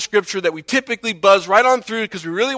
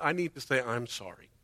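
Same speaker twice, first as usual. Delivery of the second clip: put-on flippant tone, much lower, quieter; 9 semitones lower, 16 dB quieter than usual. Explaining what repentance is not, imitating someone apologizing to god, mock flippant.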